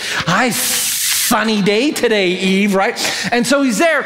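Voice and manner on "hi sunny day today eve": put-on serpent voice with lisp, higher, much slower. Speaker telling the Eden story, voicing the serpent speaking to Eve: lisping serpent voice. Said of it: "The serpent has a lisp".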